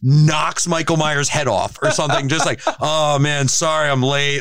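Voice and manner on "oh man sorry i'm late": put-on drunken voice, higher pitch. Voicing Hancock arriving late at the end of the movie: drunken Hancock voice. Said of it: "a drunken, stumbling Hancock comes in".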